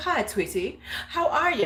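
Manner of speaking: sudden, serious put-on English accent, pitched high. Retelling a woman greeting the speaker in her new English accent. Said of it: "she's got this English accent now".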